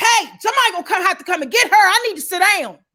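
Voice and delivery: high-pitched, loud screaming. Recalling being stuck in the aisle as her father gave up, retelling her father screaming. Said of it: "my father screaming".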